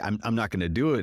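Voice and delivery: normal talking voice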